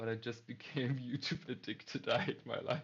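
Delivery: speaking through laughter. In a conversation, laughing while talking. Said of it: "Sorry that I'm laughing".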